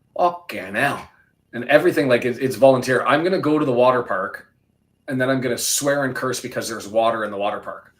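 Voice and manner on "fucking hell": put-on Yorkshire accent. Explaining what they love about the Yorkshire accent, then showing it: Yorkshire accent. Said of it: "the thing I love about the Yorkshire accent".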